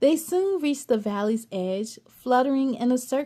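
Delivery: ordinary delivery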